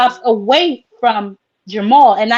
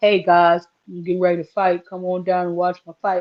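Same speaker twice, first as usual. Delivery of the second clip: mock bland, dull voice, lower and quieter; 5 semitones lower, 5 dB quieter than usual. Mocking a fighter's bland promo video: mocking imitation of a dull fighter. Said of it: "he doesn't really have a personality".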